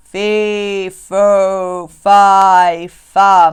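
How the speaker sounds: huge, deep rumbling bellow, very loud, very slow. Reading a story about Jack, the narrator voices something above his head in a big, deep voice. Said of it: "a big, deep voice, a rumbling thing".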